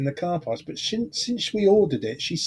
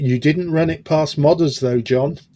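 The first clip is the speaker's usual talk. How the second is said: ordinary talk, nothing marked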